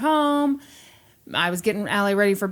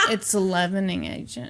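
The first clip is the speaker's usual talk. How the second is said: patronizing, condescending tone, as if to someone slow; 2 semitones lower, 4 dB quieter than usual. Imitating Brandy explaining a baking fact: imitating Brandy's condescending voice. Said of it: "says things to people in a condescending voice".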